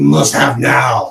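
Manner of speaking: belted out slow, loud and urgent.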